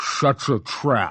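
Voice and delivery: snarling, brutish voice. The strongman carrying Carter off answers his shout, snarling. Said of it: "the walrus snarled".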